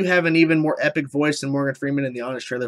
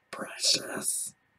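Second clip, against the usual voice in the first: very quiet whisper in a creature voice. Reactor answering a request for impressions: Gollum impression. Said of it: "Can you do a Gollum or Dobby impression?".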